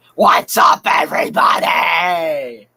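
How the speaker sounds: Philadelphia stadium sports fan voice. Previewing an upcoming video, a host greets viewers in a Philly sports fan impression. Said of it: "I'll give you a preview of it".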